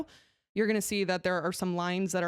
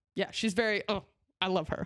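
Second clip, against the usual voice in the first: plain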